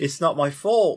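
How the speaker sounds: London Cockney accent. Trying out an accent while your co-speaker judges it, Cockney accent. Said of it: "That's Cockney".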